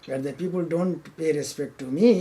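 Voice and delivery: ordinary talk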